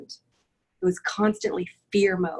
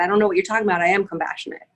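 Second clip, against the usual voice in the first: mock anger, angry and defensive tone; 3 dB louder than usual. Retelling a reply to a sponsor about compassion: imitating her own angry reply. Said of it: "I said it with this anger in my voice".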